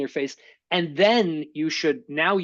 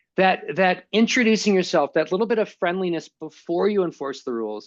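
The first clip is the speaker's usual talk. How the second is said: normal talking voice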